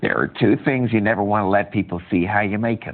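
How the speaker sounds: very deep, low put-on character voice. Doing the voice for a character's line in a reading: put-on character voice. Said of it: "I'll do the voice for this one".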